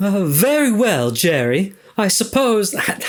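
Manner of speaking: put-on failed British accent. Replying to jerry, attempting a failed british accent. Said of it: "that's not a British accent".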